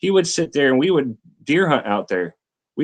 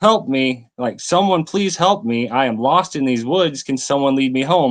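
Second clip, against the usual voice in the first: put-on tearful, crying pleading tone. Retelling being lost in the woods at sundown: retelling own crying plea. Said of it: "I'm crying at this point".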